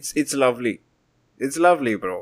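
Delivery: sarcastic tone. Answering another speaker's teasing question about a reality check: sarcastic tone. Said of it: "took away the sarcasm just in case".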